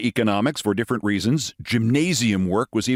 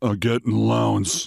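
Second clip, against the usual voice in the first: low, husky voice, embarrassed. Reading a story aloud, a football player answers the professor: low, husky embarrassed voice. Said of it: "in a low, husky voice, obviously embarrassed".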